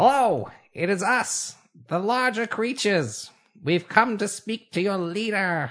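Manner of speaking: chittering, rat-like little rodent voice. Playing Waywalker speaking to the rats, Waywalker's rat chitter. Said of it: "And begins his chitter".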